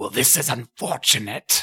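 voice from unseen source. Voicing a voice from an unseen source heard after a gust of wind: voice from an unseen source. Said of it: "And you hear a voice".

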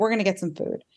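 mock angry voice. Retelling own past words while taking someone to get food: imitating own angry past self. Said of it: "Angry twenty-three-year-old me was like".

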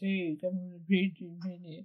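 put-on manly voice, deep and soft. Reading out a message from a gameplay team member: put-on man voice. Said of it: "Should I do this in a man voice?".

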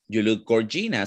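ordinary talk, nothing marked

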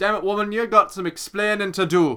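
put-on rough Jamaican accent, high and loud. Speaker acts out Jojo confronting a woman, in an attempted Jamaican accent. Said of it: "That was somewhat that, like, Jamaican".

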